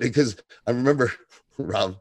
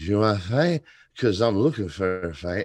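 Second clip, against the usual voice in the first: put-on slurred drunken voice. Speaker recapping a show, imitating Nate's drunken slur. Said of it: "the way he slurred this".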